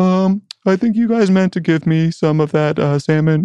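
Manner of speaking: very high, mopey, sad-sack, woe-is-me dog voice. Speaker and his wife give their dog a voice: mock-mopey dog voice. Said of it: "kind of this like sad sack, like woe is me".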